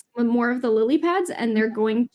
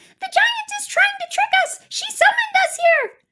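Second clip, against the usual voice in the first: very high, squeaky, tiny little voices; 3 dB louder than usual. Storyteller voices figures beyond the wall of water, in tiny little voices. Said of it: "you hear these tiny little voices going".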